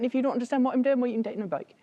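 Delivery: Norfolk English dialect. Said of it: "We talk like that".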